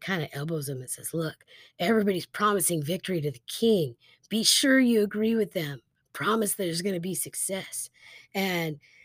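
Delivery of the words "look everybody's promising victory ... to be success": ordinary talk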